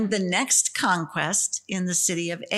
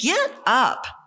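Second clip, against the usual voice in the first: higher-pitched, fed-up, exasperated tone; 5 semitones higher, 3 dB louder than usual. A speaker retells God telling Joshua to get up, putting on a mom's tone. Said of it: "Only I use that tone of voice".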